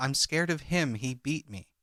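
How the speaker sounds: normal talking voice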